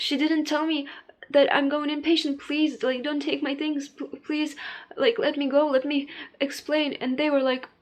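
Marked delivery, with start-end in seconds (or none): 2.4-6.9 acted-out, pleading, begging tone. Recounting being taken inpatient, retelling own begging to be let go. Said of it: "I was just begging them to let me go".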